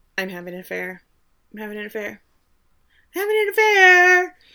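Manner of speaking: repeated, swooping stage whisper, growing each time. Recapping an episode, acting out a character lying in bed, whispering louder and louder. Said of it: "she's whispering".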